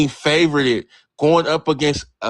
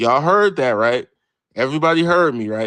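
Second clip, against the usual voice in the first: plain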